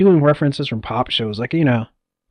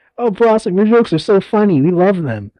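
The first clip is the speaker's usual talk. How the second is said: mock gushing, fawning tone with a sarcastic edge; 4 semitones higher than usual. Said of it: "That's what it feels like he said".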